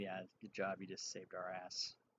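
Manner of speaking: hushed, very quiet half-whispered voice. Walking up to Ezekiel in character, half-whispering. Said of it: "I whisper to him".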